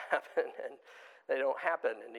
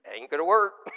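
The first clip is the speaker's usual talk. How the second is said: raised, matter-of-fact, final-sounding delivery; 3 semitones higher, 6 dB louder than usual. Retelling how a builder brother judges the work: imitating his brother. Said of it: "I should be trying to imitate him".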